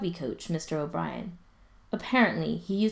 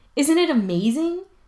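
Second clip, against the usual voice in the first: very high, very loud, self-satisfied, smug; 10 semitones higher, 9 dB louder than usual. [name] answers Ryan about the kids waiting by the bike racks, smug. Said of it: "[name] says smugly".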